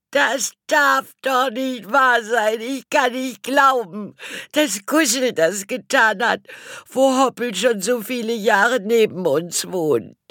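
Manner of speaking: very high-pitched, frantic, completely losing it. Reading a story, voicing a family member's outburst, totally flipping out. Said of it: "Sie drehte total durch".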